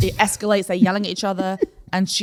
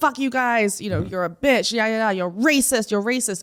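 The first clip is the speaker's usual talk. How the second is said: mock-angry aggressive man's rant, slower; 2 semitones higher than usual. Retelling a man's tirade at staff in a coffee shop, imitating an angry, aggressive man.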